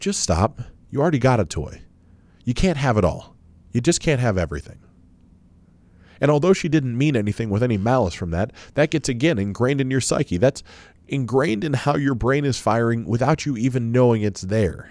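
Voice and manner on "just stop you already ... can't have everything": put-on dry, dead-straight deadpan voice. Retelling what a mom says to her crying child: imitating mom's deadpan. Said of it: "your mom looks at you deadpan and says".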